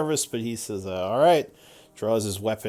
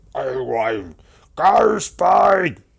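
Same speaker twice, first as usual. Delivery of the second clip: bellowing giant voice, words roared out loudly; 4 semitones higher, 8 dB louder than usual. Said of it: "So he roars loudly at first".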